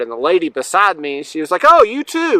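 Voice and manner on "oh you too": super sarcastic, very high-pitched voice. Retelling what the lady beside them in transition said: imitating a sarcastic remark. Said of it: "she was being super sarcastic".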